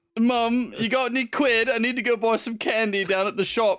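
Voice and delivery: put-on Cockney accent. Acting out a son talking to his mum, in a put-on Cockney accent. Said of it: "It's just more Cockney".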